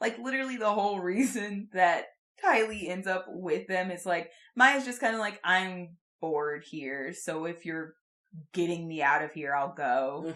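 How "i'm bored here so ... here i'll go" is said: flat, level monotone drone with zero inflection. Describing how Maya ends up going with Tylee, imitating Maya's flat monotone. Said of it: "Like just full monotone".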